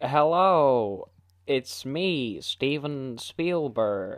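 very slow, drawn-out delivery, every word dragged out. Pretending to answer a phone call: Steven Spielberg impression. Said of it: "S1: Hello, are you there?".

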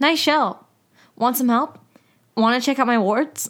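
put-on little boy voice. Retelling a scene where a little kid approaches a girl: imitating a little boy. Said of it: "little kid goes up to her and goes".

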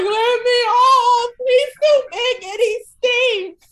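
very high, loud, drawn-out sobbing wail. Retelling being put on a galloping horse, the speaker acts out their cries: acting out crying. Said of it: "bouncing up and down, crying".

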